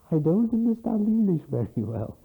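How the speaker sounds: very loud, very high-pitched voice. Retelling what a little girl said, in a very loud voice. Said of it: "in a very loud voice".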